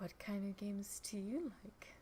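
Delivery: very quiet, very soft, hushed, soft-spoken voice. Narrating a game scene, voicing a woman asking the players a question, very soft voice. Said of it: "in a very soft voice says".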